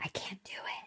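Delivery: put-on whisper. Retelling a show character's line to another speaker, imitating a whisper. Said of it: "kinda whispers it".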